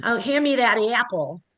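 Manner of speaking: thick, exaggerated Midwest accent. Showing what the midwest accent sounds like: exaggerated midwest accent. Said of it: "it's really Midwest".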